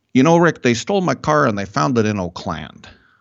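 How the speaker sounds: put-on speaking with Italian accent. Speaker imitating his barber telling him about a stolen car: Italian barber's accent. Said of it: "I sound like my Italian barber".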